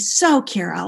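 put-on snippy voice with attitude. Retelling an interviewer going off script: imitating someone with attitude. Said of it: "he said it a little bit with an attitude".

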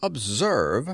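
dry, instructive, lecturing tone of voice. A man measuring an asteroid speaks while punching a calculator: dry, didactic voice. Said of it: "he said in a dry, didactic voice".

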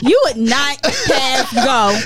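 while laughing.

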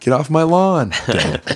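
mock shouting. Voicing a Screaming Skull shouting at enemies: mock shouting. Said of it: "just shouting".

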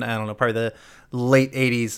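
ordinary delivery

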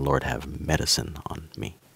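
soft, trailing voice. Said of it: "it sounded like they were saying".

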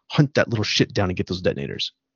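put-on low, abrupt, ruthless delivery. Retelling a character who turns super fast to Carl, imitating a ruthless turn. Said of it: "he's ruthless".

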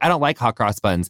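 ordinary delivery

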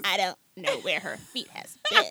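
low, put-on man's voice. Recapping a scene with the guys, quoting Terrence in a put-on voice for Terrence. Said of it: "why you got to give him that voice?".

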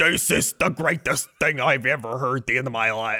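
put-on, very thick Chicago accent. Imitating an ex-Bears player, thick Chicago accent. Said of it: "He's like super Chicago".

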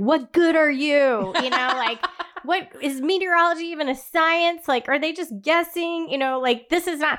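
furious, ranting, high-pitched angry yelling. Recalling yelling at a weather app about a storm, retelling angry yelling. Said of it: "I'm literally yelling at my phone because I'm like".

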